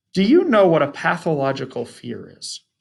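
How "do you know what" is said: ordinary delivery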